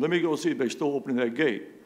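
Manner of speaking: ordinary delivery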